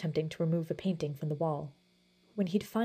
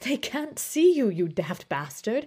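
chuckling, exasperated, reassuring tone, raised voice; 5 semitones higher, 5 dB louder than usual. Thaddeus answers Basil after Basil hisses about the painting's eyes, chuckling in exasperation. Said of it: "Thaddeus chuckled in exasperation".

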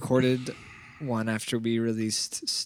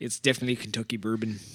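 put-on botched Irish accent sounding Canadian, quieter; 5 dB quieter than usual. Joking about drinking whiskey on Saint Patty's Day: attempted Irish accent sounding Canadian. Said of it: "that was like a Canadian accent".

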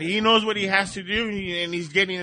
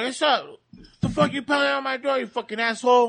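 put-on pitched-up old woman voice; 5 semitones higher than usual. Retelling what a grandmother says at the door: imitating grandma Josie. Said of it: "when I walk up to her".

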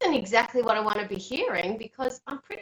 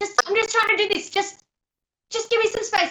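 mock yelling at a very high pitch; 10 semitones higher, 5 dB louder than usual. Retelling what one shouts at one's kids when needing space: imitating own yelling. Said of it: "I'm yelling at my kids".

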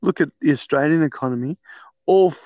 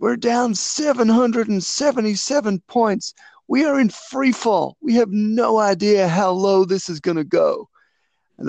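terrible put-on American accent, pitched up; 7 semitones higher than usual. Quoting what a dramatic bloke said, in a terrible american accent. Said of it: "I'll do a terrible American accent".

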